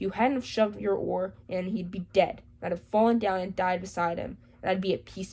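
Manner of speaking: ordinary delivery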